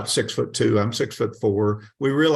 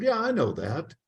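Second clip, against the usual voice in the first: put-on second voice, slightly higher in pitch; 4 semitones higher, 4 dB quieter than usual. Retelling a dialogue between two voices, the other one replying: a little higher voice. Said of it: "That was the other voice".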